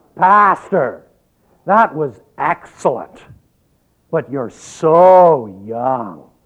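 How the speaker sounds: resounding, commanding stentorian voice, booming and very drawn out. A woman from the church takes the pastor's hand every Sunday, stentorian voice. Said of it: "say in a remarkably stentorian voice".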